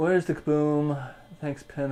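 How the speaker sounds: put-on dolphin character voice. A quick joking aside, done in the speaker's best dolphin voice. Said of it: "I did that in my best Dolphin voice".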